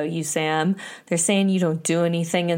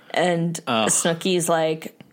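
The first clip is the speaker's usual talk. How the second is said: usual speaking voice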